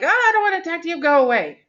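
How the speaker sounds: rude, grouchy voice, very high and fast. Retelling how one friend answered another friend's greeting: mock-grouchy Alyssa voice. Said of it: "she responded with a grouchy voice".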